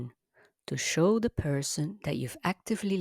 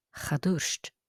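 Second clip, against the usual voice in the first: stress on the tuairst syllable, not on cha. Giving the answer as a definite no, stress on tuairst, not cha. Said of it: "I'm putting the emphasis on tuairst, not on the cha particle".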